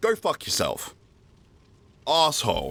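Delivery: agitated, worked-up tone. Ranting before having played a match yet: worked up. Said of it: "I'm sorry that I'm this worked up".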